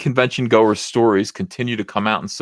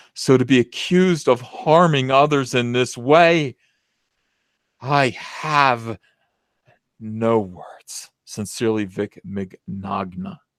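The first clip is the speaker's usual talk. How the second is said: mock solemn, sincere tone; 3 semitones higher than usual. Reading aloud the last paragraph on request: mock solemn sincerity. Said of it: "with solemn sincerity".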